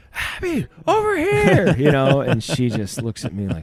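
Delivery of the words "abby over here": screaming, higher. Retelling calling a daughter from the car: retelling a scream. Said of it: "I start screaming".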